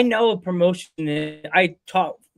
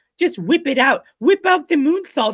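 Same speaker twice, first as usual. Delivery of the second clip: put-on slight British accent, high and loud, called out; 8 semitones higher, 5 dB louder than usual. Repeating what she says about the moonsault that makes you laugh, in her little British accent. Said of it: "with her little British accent".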